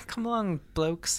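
soft, affected, put-on British accent. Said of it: "we've broken out the British accent".

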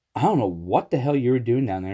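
ordinary talk

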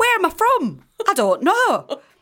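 put-on Brighton accent. Answering a question about the accent, still in put-on Brighton accent. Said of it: "Is that your Brighton accent?".

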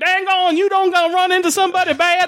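silly, ridiculous, high-pitched put-on hillbilly trucker voice. Describing the other truckers, doing their lines in a ridiculous hillbilly voice. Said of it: "they're just this ridiculous hillbilly voice".

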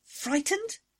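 very high-pitched, stunned, incredulous tone. The narrator answers Tywin's question about the frightened woman, in disbelief. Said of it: "I said in disbelief".

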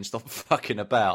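normal talking voice

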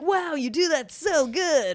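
Venice surfer dude voice. Retelling how people praised his attempts at the language, in a Venice surfer dude voice. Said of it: "You sound like a fucking surfer from fucking Venice".

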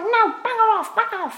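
really high, loud scolding.

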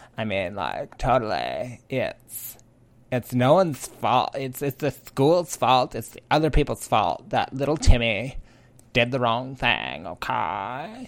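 entitled, complaining-customer voice. Showing listeners that they have a better Karen voice, in a Karen voice. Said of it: "There's my Karen voice".

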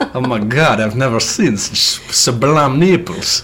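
put-on Italian accent throughout. Discussing a book scene with a co-reader, voicing Chillingworth in an Italian accent. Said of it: "Why is he Italian?".

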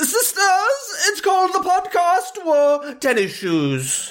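very slow, very high, swooping, spoken through the teeth. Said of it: "doing an impression of her".

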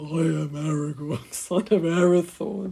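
silly, hammy, loud, slow put-on voice. Imitating a mum saying a character's line, in a funny put-on voice. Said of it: "she would do it in this funny voice".

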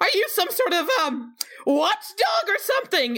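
very high-pitched, nearly squeaking voice. Voicing Cacophony as she speaks to a clockwork construct, very high-pitched Cacophony voice. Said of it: "Cacophony just very high-pitched in voice goes".

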